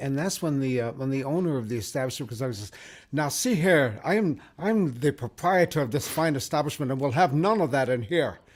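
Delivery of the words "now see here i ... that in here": very bad put-on Irish accent, slower. Telling a joke, the speaker voices the establishment's owner in a very bad Irish accent. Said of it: "I do a very bad Irish accent".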